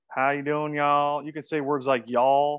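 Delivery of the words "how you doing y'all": put-on Southern accent with a slight roll. A Midwestern speaker showing how to talk more like the South, in a Southern accent. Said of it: "if you want to talk a little bit more like the South".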